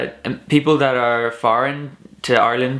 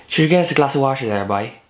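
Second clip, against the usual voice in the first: put-on fast, higher-pitched Irish accent. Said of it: "in Ireland I think you're more likely to say".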